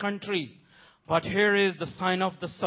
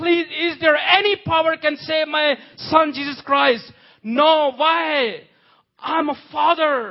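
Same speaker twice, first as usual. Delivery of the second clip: put-on pleading voice, much higher; 7 semitones higher, 7 dB louder than usual. The speaker performs an impression of God as a father: God voice, mock desperate pleading. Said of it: "This is God's impression".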